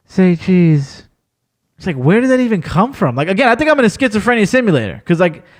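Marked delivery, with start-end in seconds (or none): 0.1-1.0 low, flat, dead, expressionless monotone drone. Retelling a brawl with a mouse when a voice says it in low monotone. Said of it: "mad low, mad monotone".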